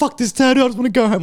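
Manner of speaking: mock stressed outburst. Retelling a wife's complaint about running late: imitating stressed complaint. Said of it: "My wife's getting stressed".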